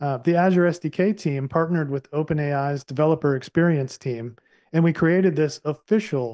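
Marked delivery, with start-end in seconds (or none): 5.6-6.4 stress on the word official. Presenting a newly created library on a slide: stress on official. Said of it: "I'm going to emphasize the word official".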